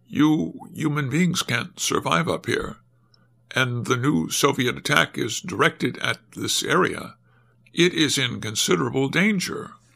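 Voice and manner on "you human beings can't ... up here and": usual speaking voice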